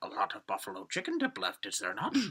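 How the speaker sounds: low voice with swooping, swinging pitch. Imagining Yoda at a party talking about the dip: imitating Yoda. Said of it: "the face Dan just did was so Yoda".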